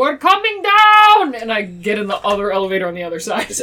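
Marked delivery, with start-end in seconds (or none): 0.0-1.3 very high, loud call hollered far. A player calls down the elevator shaft to the split-up party, yelling down the shaft. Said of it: "I'm gonna yell down the shaft".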